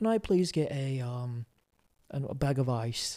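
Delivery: fake British accent, slow and halting. Retelling asking a store clerk for ice: imitating his own british accent. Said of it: "I did my accent in Target".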